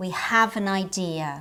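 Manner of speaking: have said with extra intensity, stressed. Showing have as the main verb in an example, stress on have. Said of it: "we pronounce it with more intensity than when it's the auxiliary verb. Like this".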